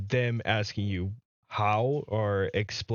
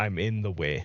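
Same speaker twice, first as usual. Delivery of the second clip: put-on elderly man's voice; 2 semitones lower than usual. Repeating what the old man's voice he heard said, in an old man's voice. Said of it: "I hear an old man's voice".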